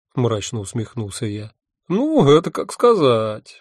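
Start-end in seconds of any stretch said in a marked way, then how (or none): 1.8-3.3 long, slow, drawn-out raised drawl. Narrator reading another man's reply to the first-person narrator, drawled. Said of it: "протянул он".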